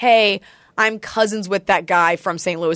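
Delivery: ordinary delivery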